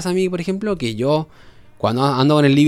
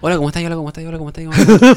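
loud, pushy, way-too-intense put-on delivery; 5 dB louder than usual. Retelling own past messages on a dating app: imitating own overly intense greeting. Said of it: "Muy, muy intenso".

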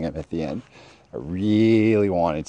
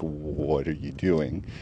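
trembling, shaky, spooked, frightened voice; 3 semitones lower, 5 dB quieter than usual. Retelling how a manager reacted when confronted: imitating a shaky, scared voice. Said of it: "all kind of shaky and everything".

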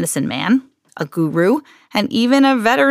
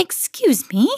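cheerful, kindly, bright, sunny tone; 4 semitones higher than usual. An old woman at mr. cream's front door, speaking brightly. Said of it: "she said brightly".

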